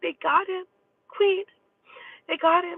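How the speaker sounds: very high, sobbing, tearful, distraught crying voice. Retelling a phone call from a woman who was crying: imitating someone crying, very upset. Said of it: "crying, very upset".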